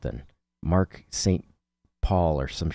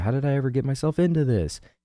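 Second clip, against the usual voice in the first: put-on whiny yelling voice, much higher; 9 semitones higher than usual. Quoting a character's repeated catchphrase, whiny, yelling character impression. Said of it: "it's always whiny and yelling".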